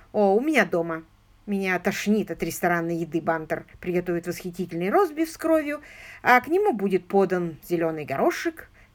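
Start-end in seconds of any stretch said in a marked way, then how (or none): none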